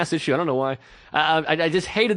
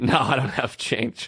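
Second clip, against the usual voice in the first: mock smug, condescending, with a laugh through it; 5 semitones lower than usual. Retelling how a kid answered a man asking for change, imitating condescending laughter. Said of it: "the kid laughs condescendingly".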